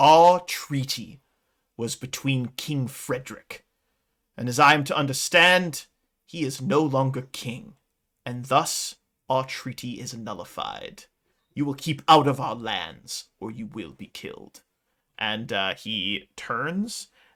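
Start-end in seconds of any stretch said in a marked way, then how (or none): 0.0-14.6 authoritative, imperious, commanding voice. A game master speaks as the centaur to the players; commanding centaur voice. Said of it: "who speaks with his commanding voice".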